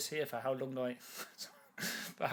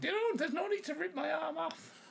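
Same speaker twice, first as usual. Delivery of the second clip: put-on old Irish woman voice. During a game, a player voices an old woman from County Donegal: old Irish woman voice. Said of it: "I come from County Donegal".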